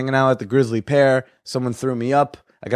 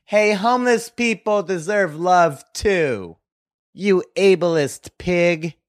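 acted-out, high-pitched call; 6 semitones higher than usual. Retelling a girl at a show yelling at him: imitating a girl yelling. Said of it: "One girl yelled out".

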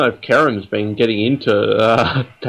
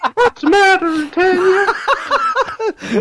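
squeaked very high, cartoon style. Speaker calls out to Tanya: Mickey Mouse voice. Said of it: "that was Mickey Mouse just there".

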